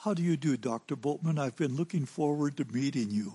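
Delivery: put-on Oxford accent. Retelling how a king greeted him when they first met, crisp Oxford accent. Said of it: "in a crisp Oxford accent".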